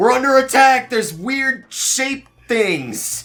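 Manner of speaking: very high, very loud, drawn-out alarmed shouting. Voicing people upstairs who shout that they are under attack: people shouting in alarm. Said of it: "people shouting".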